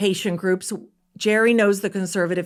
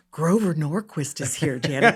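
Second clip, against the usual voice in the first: put-on whisper, lower in pitch; 4 semitones lower than usual. Retelling what someone whispered after a conversation: imitating Sally whispering. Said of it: "she whispers to me".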